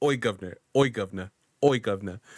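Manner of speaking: trying a put-on British accent. Taking a turn at doing an accent, speaking in an attempted British accent. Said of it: "I don't know how far I'm gonna get with this British accent".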